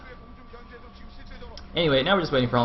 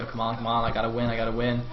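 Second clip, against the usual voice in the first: plain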